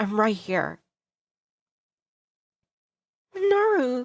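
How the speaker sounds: tearful, crying with mixed sadness and happiness. Running to the door and throwing arms around someone: crying with sadness and happiness. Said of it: "crying out both sadness and happiness".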